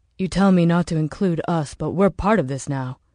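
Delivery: ordinary delivery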